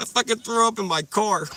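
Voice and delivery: put-on Cuban accent, pitched way up and loud. Retelling a story, speaker quotes a man, imitating Serrano's Cuban accent. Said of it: "Cuban accent".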